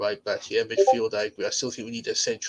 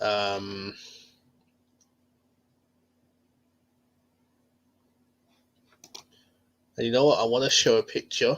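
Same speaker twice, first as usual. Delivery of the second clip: slow, terse, unhurried laconic delivery. Discussing the team's poor performance to the audience, slow and laconic. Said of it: "I'm speaking very kind of slowly and laconically".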